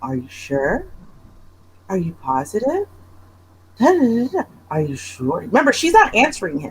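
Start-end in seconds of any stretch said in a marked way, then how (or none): 0.0-5.4 low, soft, overly, weirdly calm voice. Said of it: "overly, weirdly calm".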